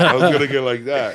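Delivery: laughing.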